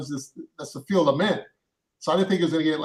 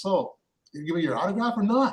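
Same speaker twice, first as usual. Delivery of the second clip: put-on heavy, thick New York accent; 4 semitones higher than usual. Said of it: "do the kind of thick Nor-, New York, uh, accent".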